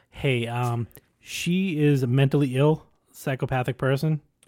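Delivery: plain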